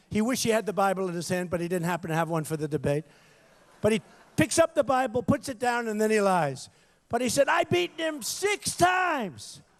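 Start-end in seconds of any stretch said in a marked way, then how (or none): 7.5-9.6 mock screeching, very high and very slow. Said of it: "he's screaming at the top of his lung".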